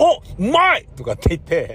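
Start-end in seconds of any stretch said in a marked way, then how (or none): 0.0-0.9 mock very high, loud, sudden blurted outburst. Eating alone with no companions, the speaker relives the moment: retelling a loud blurt. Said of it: "でかい声出しちゃったんだよね".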